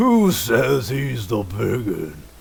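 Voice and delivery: booming, very slow, deliberate, drawn-out giant bellow. Describing a scene, a huge figure in camp answers a boast in a loud booming voice. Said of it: "you hear a loud, booming voice".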